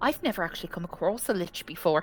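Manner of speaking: guileless, unworldly, innocent, naive tone. Voicing a character admitting she has never met a lich: naive voice, Victoria. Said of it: "you can tell the naivety in Victoria's voice".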